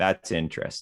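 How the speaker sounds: plain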